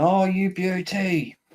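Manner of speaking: imitated commentator screaming. Recalling a famous half volley goal, imitating commentators screaming. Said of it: "the commentators screaming".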